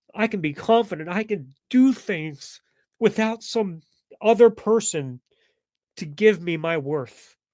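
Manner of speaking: loud, teary, tearing up mid-sentence. Recalling a painful day from the past, tearing up. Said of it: "I'm sorry for tearing up".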